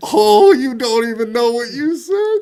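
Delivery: giddy, very high and loud excitement. Reacting to what another speaker just said, giddy. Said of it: "You're so giddy right now".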